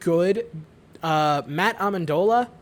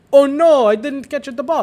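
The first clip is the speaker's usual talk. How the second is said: loud, pitched-up, put-on Italian accent; 8 semitones higher, 9 dB louder than usual. Quoting football receivers who dropped the ball, in an Italian accent. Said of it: "why did I give it an Italian accent?".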